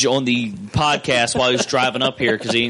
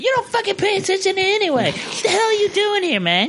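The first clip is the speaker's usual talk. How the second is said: mock, very high-pitched screaming voice. Recounting how a girl screamed at him after he asked a question, retelling a scream. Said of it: "the one chick just starts screaming at me".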